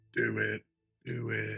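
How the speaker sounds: sinister whispering. Player voicing a spell's whispers behind another character's head, ominous whisper. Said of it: "I'm gonna do the ominous whispers".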